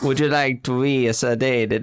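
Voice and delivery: put-on Italian accent. Offering someone a sedative, spoken in an Italian accent. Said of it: "That's an Italian accent".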